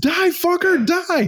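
put-on, very high, shrill, top-of-lungs scream. Describing a woman playing a game with two zombies close by; imitating her screaming. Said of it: "she's literally screaming at the top of the lungs".

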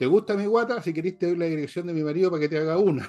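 quick, sharp, high shout pitched upward. Retelling a mother's quick comeback yelled up at a worker: imitating a shouted comeback. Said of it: "le gritó para arriba".

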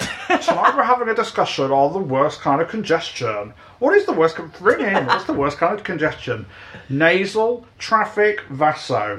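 swooping, animated, comic character voice with swinging pitch. Doing an impression as a radio host asking callers to ring in: Alan Partridge voice. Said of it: "Now I'll do my Alan Partridge impression here".

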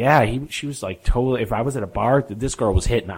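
ordinary talk, nothing marked

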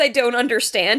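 ordinary talk

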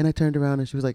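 ordinary talk

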